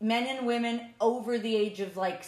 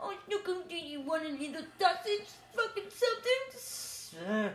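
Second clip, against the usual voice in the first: put-on baby talk voice, much higher pitch; 6 semitones higher, 6 dB quieter than usual. Mocking people who talk to animals, the speaker does a baby voice. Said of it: "baby voice to animals".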